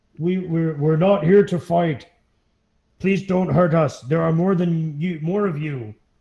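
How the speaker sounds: stammering, faltering voice calling out from a distance. Narrator voices a voice calling out from the trees, booming voice. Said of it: "you're hearing a voice boom out".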